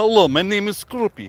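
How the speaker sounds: high-pitched, heavy put-on Russian accent. Voicing a Pokemon that seems to sound Russian: Scroopy with Russian accent. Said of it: "it just sounds like a Russian Pokemon to me".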